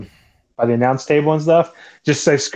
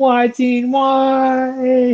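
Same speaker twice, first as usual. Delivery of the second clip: put-on shocked little kid voice, very high, drawn-out; 12 semitones higher than usual. Recalling a crowd's reaction, the speaker imitates a shocked little kid. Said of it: "Everybody was just like so like shocked".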